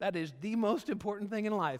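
high, squeaky, excited voice. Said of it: "my voice just went really high and squeaky 'cause I was really excited".

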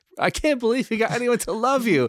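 high, breathless speech gasped through laughter. Retelling how a wife reacted to old films: imitating breathless laughter.

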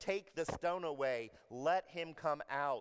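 loud, commanding, authoritative tone. Retelling a scene at a grave, acting out a commanding voice. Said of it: "He says in a commanding voice".

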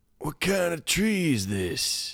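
put-on very high, slow, spaced-out old hippie drawl. Retelling how a passing old hippie-looking man asked a question: imitating an old hippie's voice. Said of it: "this is what he sounds like, I swear to God".

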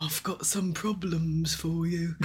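put-on cockney accent, dodgy trader voice. A game narrator voices a character speaking to a player, in a cockney accent. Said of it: "He intones in a cockney accent".

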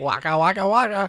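comic, high-pitched puppet bear voice. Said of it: "sounded an awful lot like Fozzie Bear".

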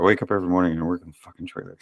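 exasperated. Describing waking up every morning to work on the trailer: fed up. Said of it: "You sound so happy about it".

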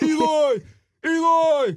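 put-on hoarse yell. Talking college basketball, show how he yells a player's name, imitating Brad Brownell's hoarse yell. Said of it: "Has like a hoarse voice at all times".

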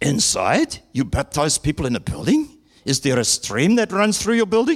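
fake German accent, played for laughs. Acting out both sides of a baptism conversation, fake German accent as Felix. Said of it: "we'll give him a fake German accent".

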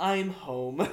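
dead flat, cold delivery. Retelling an anime scene where Shinji answers: imitating Shinji's psychopath serial killer delivery. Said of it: "like a psychopath serial killer just says".

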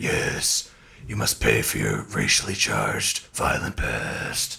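very low, slow, creaky villainous voice.

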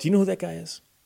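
soft, hushed, secretive half-whisper. Acting out a stranger pointing out an old man: imitating someone half-whispering. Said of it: "somebody whispers to you and goes".

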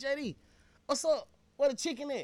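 loud, high-pitched hollering yell. Retelling calling down a long table at a restaurant: retelling a yell. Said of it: "I yells down there".

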